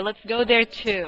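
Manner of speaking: ordinary delivery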